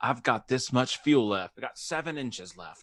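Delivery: clear put-on British accent. Retelling a film scene, a pilot checks his fuel with a ruler: British accent. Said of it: "It's a good British accent".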